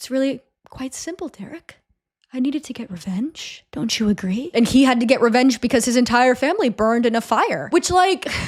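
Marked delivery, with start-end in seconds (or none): 0.0-4.5 very quiet, hushed, menacing murmur. Retelling a villain's line in a recap of a scene: imitating someone talking very quietly. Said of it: "just kind of talking very quietly".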